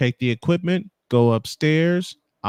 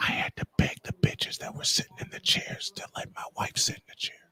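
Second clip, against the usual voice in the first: playful, joking, very hushed whisper; 10 dB quieter than usual. Telling a story about getting a seat for his wife: joking whisper. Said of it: "I better whisper this".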